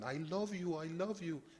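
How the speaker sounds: put-on high-pitched voice in a broken Urdu accent. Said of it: "in his broken Urdu accent".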